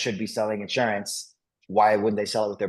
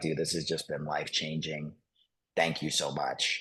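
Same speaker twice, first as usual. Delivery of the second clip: put-on choked-up voice, lower and quieter; 5 semitones lower, 8 dB quieter than usual. Retelling a man's thankful phone call after his debt was paid, imitating him choking up. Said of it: "he's like choking up over the phone".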